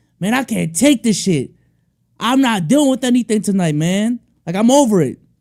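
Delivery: fed-up top-of-lungs yell. Retelling a frat guy leaving a bar after the Bears lost, retelling a guy yelling. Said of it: "Guy yelling at the top of his lungs".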